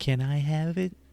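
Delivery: put-on little child's voice, very high-pitched and loud. Recalling a scene where he was off camera, the speaker is imitating his little voice. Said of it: "just hear his little voice say".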